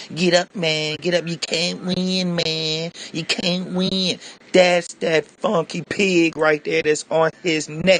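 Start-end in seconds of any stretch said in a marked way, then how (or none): 0.1-4.2 put-on, jeering, mocking slang-talk voice. Retelling a cop taunting a man on the sidewalk, in a mocking jive-talk turkey voice. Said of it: "talking that jive talk turkey sound in his voice".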